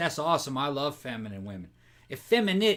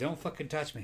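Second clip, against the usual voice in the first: pretend angry cat voice, quieter; 9 dB quieter than usual. Voicing the cat being moved from its spot: voicing a mad cat. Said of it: "She's mad. She's like".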